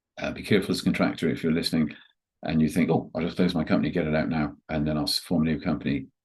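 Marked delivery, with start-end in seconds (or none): none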